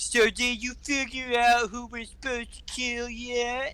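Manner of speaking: very high, very slow, mocking drawl. Recounting a movie trailer's ending, the speaker imitates Captain Boomerang mocking. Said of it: "Captain Boomerang is all mockingly".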